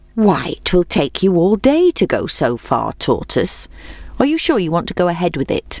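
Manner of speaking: ordinary delivery, nothing marked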